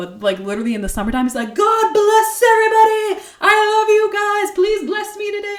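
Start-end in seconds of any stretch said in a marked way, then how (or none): 1.5-5.6 very high, loud, exuberant shout. Imitating a man with a McDonald's sign greeting everybody: imitating someone yelling. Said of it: "I don't even wanna yell into the microphone".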